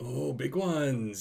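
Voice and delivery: slow, drawn-out, cool storyteller voice.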